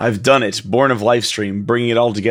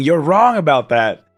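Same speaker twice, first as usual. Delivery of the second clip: mock furious, high, angry screaming outburst; 6 semitones higher, 3 dB louder than usual. Recounting how she flips out on him: retelling a scream. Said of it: "she's like screaming".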